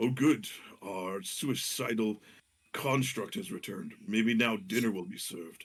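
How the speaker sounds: audible aside spoken to oneself, plainly heard. Voicing a lord who mutters a complaint to himself loudly: muttering to himself but loudly. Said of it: "he's not saying it under his breath".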